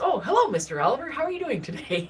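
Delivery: put-on high kid voice. Retelling how a kid answered the narrator's dad, imitating Steven's way of talking. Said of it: "That's how this kid always talked".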